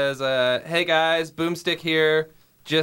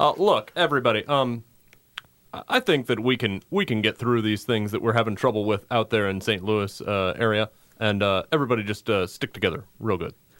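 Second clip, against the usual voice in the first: put-on very low, hesitant, formal speaking voice; 7 semitones lower than usual. Reading a made-up statement as the president: Barack Obama impression. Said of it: "this is President Barack Obama".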